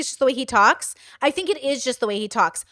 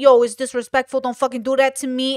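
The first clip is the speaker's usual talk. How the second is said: tough-guy, mafia-style mobster voice. Retelling how a man said it to his in-law: mafia-style voice. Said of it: "he's saying it like a mafia".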